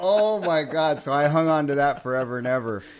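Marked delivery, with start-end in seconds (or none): 0.0-1.0 put-on high-pitched, very strong Midwestern accent. Retelling own starstruck reply backstage, strong Midwest accent. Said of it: "going real strong Midwest accent there".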